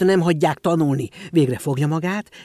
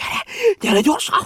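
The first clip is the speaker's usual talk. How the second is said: very high, choked out in a gasping rush. Someone runs up to Auer, grabs his arm and pulls him along, gasping, hurried.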